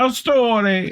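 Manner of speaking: over-the-top, exaggerated, very high Italian accent. Introducing a story someone wrote in, in a super italian accent. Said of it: "I have to do it super Italian".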